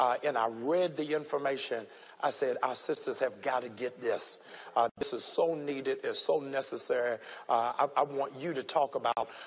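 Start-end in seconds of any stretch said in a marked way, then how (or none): none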